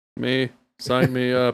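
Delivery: put-on mechanical robot voice. Asking who wants the bio shot, then answering in a robot voice. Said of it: "That was a good imitation of a robot".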